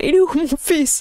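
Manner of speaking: put-on Italian accent. Retelling a scene where the octopus looks for its son: Italian accent. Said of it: "et avec un accent italien".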